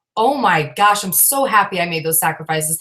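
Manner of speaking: ordinary talk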